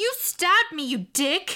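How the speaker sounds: very high-pitched, shocked shout. Narrator reads a stabbed woman shouting at her attacker, shouted in shock. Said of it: "she shouted".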